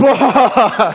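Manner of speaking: loud, high burst of laughter.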